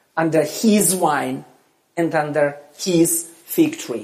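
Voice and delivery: "his" stressed, each phrase falling in pitch.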